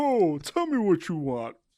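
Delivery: high, slow put-on voice like holding in a burp. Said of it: "You sound like you're holding in a burp the whole time".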